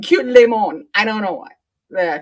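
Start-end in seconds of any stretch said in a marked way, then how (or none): 0.0-0.9 French-accented put-on delivery. Greeting a cute lemon held up on camera: french accent. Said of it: "I want to say it with a French accent".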